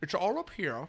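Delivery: soft, mousy nebbish voice, a bit odd. Quoting a film character's line: Grinch voice, nebbish and a bit Sean Connery. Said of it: "a little bit nebbish, a little bit Sean Connery".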